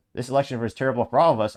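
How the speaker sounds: usual speaking voice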